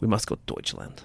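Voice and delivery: whispered, stern, curt German accent. Contrasting German accents, doing the real German: flat, curt, mock-angry German accent. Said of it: "the real German, which is, ... It's very monotoned, to the point, angry".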